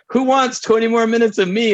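high-pitched, excited voice.

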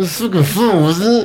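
words squeezed through clenched teeth. Retelling what a man said after yelling earlier, imitating talking through teeth. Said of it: "He's just saying the words through his teeth".

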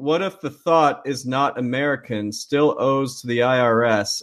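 ordinary delivery

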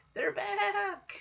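frightened, very high, soft, stretched-out terrified voice. Speaker recreating how Kimmy delivered the line, imitating Kimmy's terrified line. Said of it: "it's more of a terrified".

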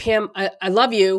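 normal talking voice

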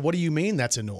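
normal talking voice

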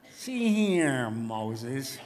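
heavily sarcastic, thickly laid-on put-on voice. Wanting more sarcasm, the speaker switches to an Edward G. Robinson voice. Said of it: "I need to use my Edward G. Robinson voice".

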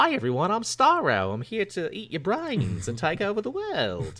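put-on New Zealand accent, soft and sing-song. Imagining the film character Starro speaking: Starro with a New Zealand accent. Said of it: "he's from New Zealand".

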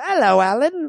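put-on London Cockney accent. Imitating a british friend who greets someone named alan: cockney accent. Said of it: "He's Cockney".

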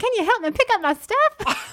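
put-on very high, very loud, shrill, botched Southern accent. Imitating a middle-aged lady asking for help, in a bad southern accent. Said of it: "She had like a southern accent. I can't really do it".

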